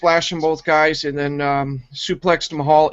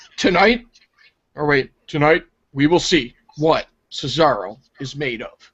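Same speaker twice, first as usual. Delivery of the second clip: robotic, mechanical, machine-like reading delivery. Quoting how he said a line about cesaro, imitating a robotic monotone. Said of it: "whole wholehearted robotic monotone bullshit".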